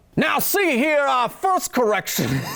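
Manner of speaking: clumsy, failed Southern accent, pitched high. Host opening the corrections segment, trying a bad Southern accent. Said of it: "still can't do it".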